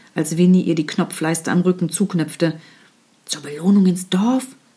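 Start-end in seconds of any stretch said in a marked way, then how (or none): 3.3-4.5 hushed whisper. A girl doubts her companion's plan while buttoning her dress, whispering. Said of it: "flüsterte Winnie".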